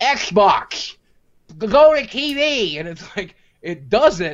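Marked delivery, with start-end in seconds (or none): 0.0-2.8 high, slow, drawn-out, commanding voice. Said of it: "I'm in there like".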